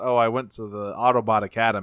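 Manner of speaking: usual speaking voice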